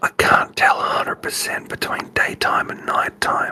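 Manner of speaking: very quiet, hushed in-character whisper. Answering another character's question in character: whispering very quietly. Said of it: "it whispers very, very quietly".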